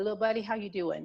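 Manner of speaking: normal talking voice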